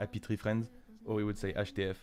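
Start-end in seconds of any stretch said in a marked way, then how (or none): 0.0-0.7 heavy French accent on English words. Showing how French people say English words, strong French accent. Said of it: "we just pronounce the English words with a strong French accent".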